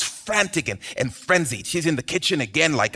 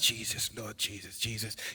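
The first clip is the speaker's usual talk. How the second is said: worked-up, barely audible low mutter; 7 semitones lower, 16 dB quieter than usual. Retelling a woman laboring while everyone else listens to jesus, imitating mumbling under her breath. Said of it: "she's mumbling under her breath".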